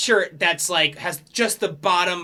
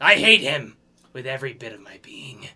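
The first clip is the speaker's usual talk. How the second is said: pirate captain voice, lower; 5 semitones lower than usual. Game master voicing the pirate captain spotting his rival: pirate captain voice. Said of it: "the captain just goes".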